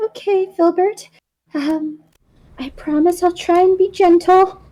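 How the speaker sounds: acted soft whisper. Voicing a character whispering to her chip before placing it: whispering in character. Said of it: "kinda whisper it".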